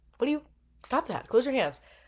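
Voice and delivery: fast, anxious, worried delivery. Recapping a fight, imitating a worried referee. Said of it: "But ref's worried".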